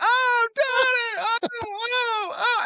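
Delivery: put-on very high, very slow, drawn-out sobbing panic. Retelling mom's reaction to a bike accident: imitating mom freaking out crying. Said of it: "just starts freaking out and crying".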